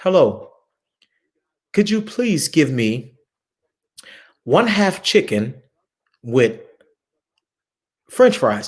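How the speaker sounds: very slow, halting speech, word by word with breaks. Retelling ordering food in germany: imitating own slow speech. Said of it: "So I had to slow it down".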